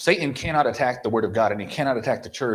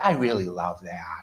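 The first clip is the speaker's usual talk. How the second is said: meek, soft, low, mild voice; 5 semitones lower, 3 dB quieter than usual. Mocking how he says it in his beta way, imitating a soft voice. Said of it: "They get all these soft voices".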